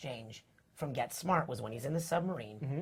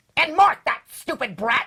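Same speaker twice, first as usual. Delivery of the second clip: shrill honking blast, very high and very loud; 12 semitones higher, 13 dB louder than usual. Recalling recording day on the show, doing the Horvitz honk. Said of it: "That was the Horvitz honk".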